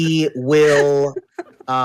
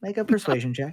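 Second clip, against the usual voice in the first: softer, quick, with rising pitch.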